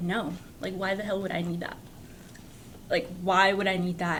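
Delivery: ordinary talk, nothing marked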